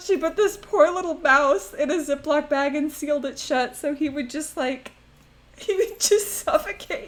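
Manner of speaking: tearful high crying voice. Speaker recounting a sad family story, crying, in tears. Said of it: "I'm like actually in tears".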